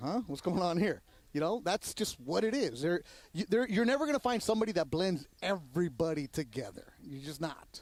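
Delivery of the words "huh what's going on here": put-on befuddled old lady voice. Retelling how the old housewives at a concert reacted, imitating confused old housewives. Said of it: "the old housewives, are like".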